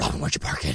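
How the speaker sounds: very low, breathy, exhaled deep voice.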